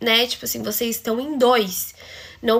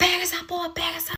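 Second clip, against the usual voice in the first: shout, higher pitched; 6 semitones higher, 5 dB quieter than usual. Retelling how the uncle yelled at him while hitting his hand: imitating the uncle yelling. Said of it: "o tio dele começou a gritar muito".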